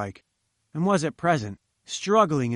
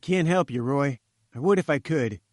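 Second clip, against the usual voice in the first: plain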